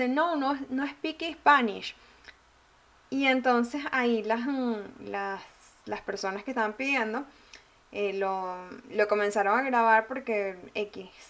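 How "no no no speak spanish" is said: put-on heavy, strong Spanish accent in English. Retelling a restaurant worker answering a customer: imitating a strong Spanish accent in English. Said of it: "así con ese acento marcado que se nota".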